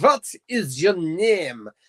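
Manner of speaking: simple, slow fake German accent. Explaining how simple a german accent is, in a put-on german accent. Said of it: "That's all you do for a German accent".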